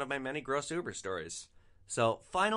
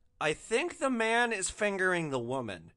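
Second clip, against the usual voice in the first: ordinary talk, nothing marked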